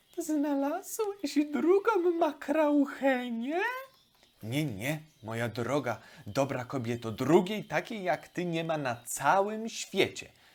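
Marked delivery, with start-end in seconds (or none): 0.2-3.6 very high, thin, squeaky little voice. Narrator reading one character's question to another, in a thin squeak. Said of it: "Henia pisnęła cienko".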